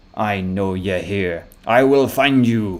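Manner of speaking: slow, gruff, rough, mocking taunting voice. An unseen voice somewhere in the maze calls out to you; gruff, taunting voice. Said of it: "a gruff, taunting voice".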